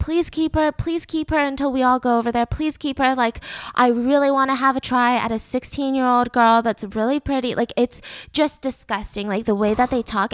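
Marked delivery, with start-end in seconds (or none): 0.0-3.1 mock pleading, faster pace. Speaker retells what one of the friends said to another, acting out someone begging. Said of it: "literally begging, begging Minato saying".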